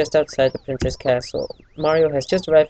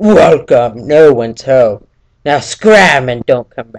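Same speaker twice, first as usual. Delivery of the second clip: very loud, booming monster-king voice; 10 dB louder than usual. Speaker asks listeners if they're ready, then does a Bowser impression. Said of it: "the best Bowser impersonation you've ever heard".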